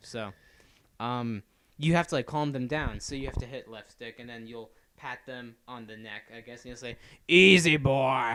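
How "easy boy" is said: booming character voice, very loud. Imitating Arthur calming his scared horse: Arthur voice. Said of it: "that's pretty much what he sounds like".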